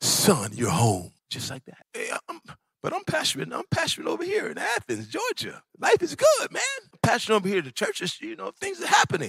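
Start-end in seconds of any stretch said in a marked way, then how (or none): 0.0-1.1 soft, hushed, very low, deep voice. Stepping off the plane onto home soil, God speaks to him: hushed voice of God. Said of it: "the hushed tones of God".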